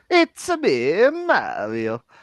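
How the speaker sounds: belted out high and swooping. Friends urge a friend to do his terrible impression again: Mario impression. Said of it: "You do your impression".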